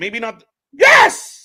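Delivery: voice shoots sky-high, shrill, squeaky, very loud. Reacting to a wrestling match mid-sentence: voice jumps way up in pitch. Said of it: "Your voice went up seven octaves".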